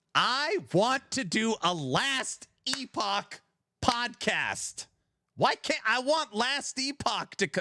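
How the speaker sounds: sudden, high, drawn-out yell. Saying they want to do a Last Epoch podcast: yelling. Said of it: "now I'm yelling".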